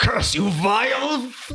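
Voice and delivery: drawn-out, very high, slow demon voice. Voicing the mailer demon as its attack is blocked: mailer demon voice. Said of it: "And the mailer demon goes".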